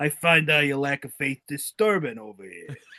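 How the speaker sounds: put-on very funny, comic, heavily laid-on Bronx accent. Doing a Darth Vader line for a friend, in a Bronx accent. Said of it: "a very funny Bronx Bronx accent".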